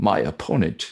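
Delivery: fake British accent, played up. Showing how to win an argument by switching accents: put-on British accent. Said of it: "switch into a British accent".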